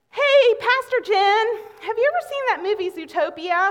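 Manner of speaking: small, high, piping little voice. Retelling a question piped up from the back of the van: imitating Braden's little voice. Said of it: "a little voice came from the back of the van".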